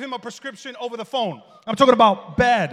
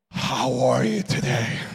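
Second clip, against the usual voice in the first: very slow, huffing, breathy voice with breath pushed out; 11 semitones lower than usual. Imitating people with bad breath who talk at you: imitating someone huffing breath while talking. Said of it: "They're talking to you like this".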